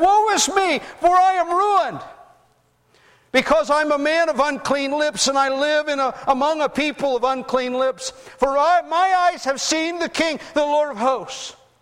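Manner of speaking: crying out in despair.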